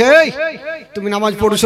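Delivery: plain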